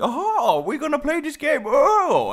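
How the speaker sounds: very high, zany, goofy gamer voice, swooping in pitch. Mocking people who play through whole games on video: imitating a funny gamer voice. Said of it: "in a funny voice or something".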